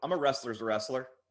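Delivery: ordinary talk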